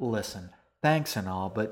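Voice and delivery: ordinary delivery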